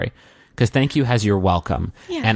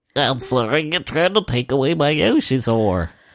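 put-on nerdy, geeky voice; 5 semitones higher than usual. Acting out a line from a scene someone painted, in a nerd voice. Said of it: "I'd have a nerd voice".

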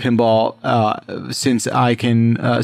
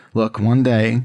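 acted quiet mutter under the breath. Retelling a vow made about a sitting room: retelling an under-breath mutter. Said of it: "under my breath".

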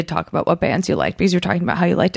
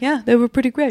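begrudging, grudging tone, pitched up; 6 semitones higher than usual. Imitating a friend's begrudging approval of a band: begrudging Mickey Rourke voice. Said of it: "a begrudging, like".

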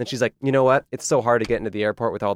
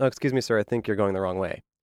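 put-on sweet, overly polite tone. Retelling a ride with an unresponsive driver, retelling speaking very nicely. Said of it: "as nicely as I could".

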